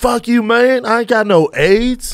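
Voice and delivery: put-on rural drawl, very high and slow.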